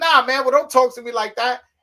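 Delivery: screaming, very high and very loud. Retelling an on-air argument, quoting what he screamed back at the show's host: retelling his own screaming. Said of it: "So I start screaming at him".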